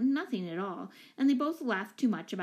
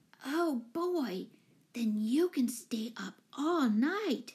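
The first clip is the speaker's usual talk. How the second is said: envious, exclaiming tone; 3 semitones higher than usual. Betsy, on her way to bed, exclaims to Mike, envious exclamation. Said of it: "exclaimed Betsy enviously".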